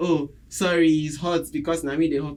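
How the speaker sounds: ordinary delivery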